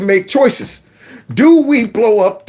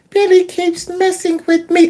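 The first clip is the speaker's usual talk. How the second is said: put-on high voice of a hurt three-year-old; 9 semitones higher than usual. Retelling what three-year-old Daryl said to the speaker, imitating Daryl's soft voice. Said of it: "he had this soft voice".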